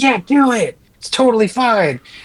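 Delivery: put-on eager, loud cheer, pitched way up. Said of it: "it was louder".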